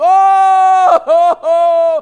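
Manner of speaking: acted, very loud, very high, drawn-out crying howl. Acting out a possessed man in the tombs: imitating a man crying. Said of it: "He was crying".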